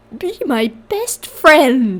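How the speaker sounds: distorted, bent, warped voice, very slow. A voice the narrator hears one night, warped voice. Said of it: "I hear in a warped voice".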